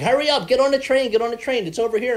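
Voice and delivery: shrill, loud yell in a very high voice. Telling a listener about an Amtrak worker at the train station: imitating a lady yelling. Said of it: "This lady started yelling at me".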